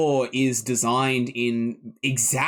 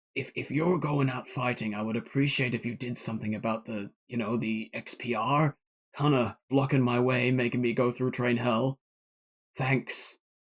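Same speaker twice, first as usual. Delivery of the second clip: soft, hushed, secretive half-whisper; 5 dB quieter than usual. A narrator voices a character who half-whispers to you as he walks away, half-whispering. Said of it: "he whispers to you and he says".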